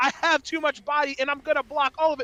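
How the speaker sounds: ordinary talk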